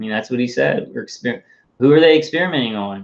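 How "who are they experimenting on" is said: sardonic, pointed, sarcastic tone. Asking a question whose answer everyone knows: sarcastic. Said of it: "I'm being sarcastic".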